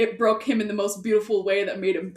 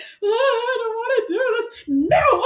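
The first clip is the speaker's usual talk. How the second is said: put-on loud, high, drawn-out sobbing whine; 5 dB louder than usual. Retelling a scene a mom brought up, a speaker imitates a crying Klaus character. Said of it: "when he's like crying to us".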